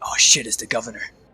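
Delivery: hushed, whispered crowd chatter. Voicing onlookers who see an elderly halfling woman arrive: whispering crowd. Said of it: "you hear whispers around".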